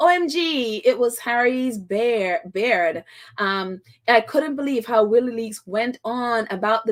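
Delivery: ordinary talk, nothing marked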